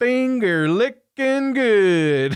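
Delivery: put-on stretched-out Southern accent. Quoting a movie line by Bill Paxton: Bill Paxton big Southern drawl. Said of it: "with a big Southern drawl".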